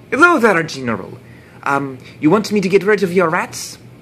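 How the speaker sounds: put-on thick French accent, loud and high. Telling a story, the narrator voices the rat catcher greeting the general: Reynard's thick French accent. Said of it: "he put up a thick French accent".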